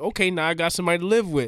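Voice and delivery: voiced as a gorilla. Acting out the gorilla after a kid falls in: speaking as the gorilla. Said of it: "Now he's like".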